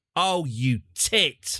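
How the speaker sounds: high, sudden yelled curse. Reacting after detaching the engines by mistake: yelling. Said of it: "I'm sorry for yelling the word tit".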